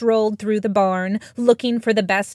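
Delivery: ordinary delivery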